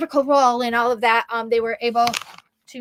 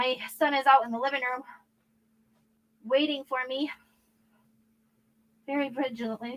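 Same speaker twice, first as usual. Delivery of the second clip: out of breath, huffing and puffing, quieter; 8 dB quieter than usual. Speaker apologizes to viewers while rushing to get ready, huffing and puffing. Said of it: "I'm like huffing and puffing".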